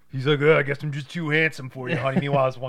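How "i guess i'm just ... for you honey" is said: mock obnoxious brutish American voice, louder. Retelling a movie scene, voicing the biker on the bus: imitating an obnoxious American brute. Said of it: "obnoxious, ignorant American asshole".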